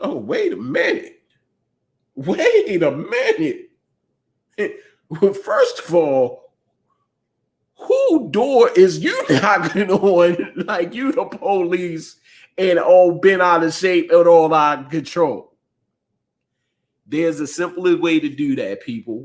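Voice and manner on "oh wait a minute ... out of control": put-on indignant, offended old woman voice, swooping and scolding. Acting out Miss Johnson's reply to someone banging on her door: imitating Miss Johnson's indignation. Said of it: "Miss Johnson is going like".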